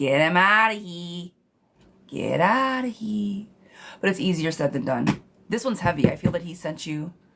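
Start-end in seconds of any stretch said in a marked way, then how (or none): 0.0-3.5 very broad, slow, thick Chicago accent. Giving his own version of telling someone off, in a very Chicago accent. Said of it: "my very Chicago version".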